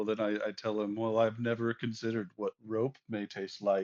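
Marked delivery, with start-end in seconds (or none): none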